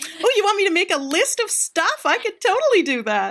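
high-pitched, bubbling, gleeful, eager delight. Eagerly offering to make a list of stuff, gleeful. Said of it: "I could hear the glee in your voice".

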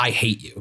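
mock talking while laughing. Retelling a character's line to another speaker, imitating laughing while speaking. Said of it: "she laughs and says".

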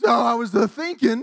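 high, cracking, nervous voice breaking on the words. Retelling standing up before a silent crowd: imitating own cracking voice. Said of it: "my voice is cracking".

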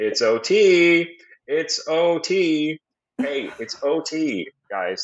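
put-on yelling. Retelling fans at a game during overtime: imitating people yelling. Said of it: "everybody's yelling".

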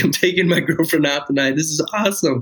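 high, joyful, whooping scream. Recounting a man's reaction to making it through Hell Week, imitating him screaming. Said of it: "he's screaming".

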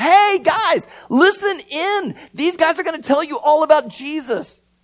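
high, loud, calling-out yell. Speaker acts out a woman calling out to everyone, imitating someone yelling. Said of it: "she's yelling at everyone".

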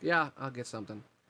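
ordinary talk, nothing marked

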